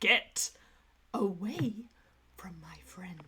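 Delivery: resolute, determined, each word drawn out very slowly. Voicing a character casting a healing spell for a friend: determined. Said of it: "he is feeling very determined right now".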